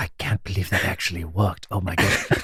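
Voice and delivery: very quiet disbelief.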